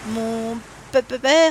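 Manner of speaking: halting, stammering speech. Scott, asked when he last saw his father, answers stammering. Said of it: "bégaya Scott".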